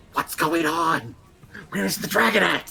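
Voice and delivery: hissed stage whisper, loud and high. A narrator voicing a character speaking to the party, loud hissing whisper. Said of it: "loudly hiss whispers at you like".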